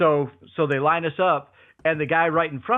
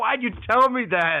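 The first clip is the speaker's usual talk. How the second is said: acted, angry, accusing, pitched-up, pissed-off voice; 7 semitones higher than usual. Retelling a story, imitating the announcer's reaction: imitating someone angry. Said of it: "The guy was so pissed".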